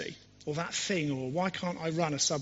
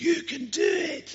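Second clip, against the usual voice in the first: very high, shrill, rough-voiced, loud belting shout; 12 semitones higher, 7 dB louder than usual. Describing a character who appears in one man's movies: imitating a recurring movie character. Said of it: "Close as I could get".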